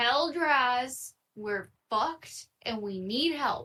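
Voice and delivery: in-character call, name stretched long. Playing a character carried into an office, yelling for help. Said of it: "I'm gonna yell".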